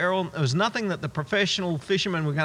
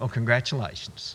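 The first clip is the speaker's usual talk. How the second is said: mocking, sarcastic inflection and tone; 6 semitones lower, 4 dB quieter than usual. Announcing sarcasm before a remark about little faith, sarcastic tone. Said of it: "here comes the sarcastic".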